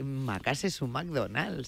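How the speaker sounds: mock know-it-all voice, slow, soft and drawn out.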